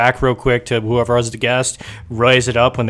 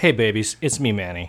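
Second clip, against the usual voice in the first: soft, seductive, sultry voice; 2 semitones lower, 5 dB quieter than usual. Greeting the audience right after being introduced, sultry voice. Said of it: "And that sultry voice".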